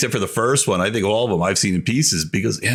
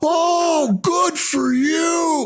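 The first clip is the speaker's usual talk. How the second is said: snapping, very high, very slow, long drawn Oh. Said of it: "he just snaps".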